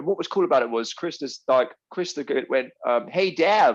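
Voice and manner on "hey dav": put-on pitched-up, loud American accent. Retelling what Krista called out: imitating Krista's American accent. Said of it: "'cause she's American and that's how she sounded".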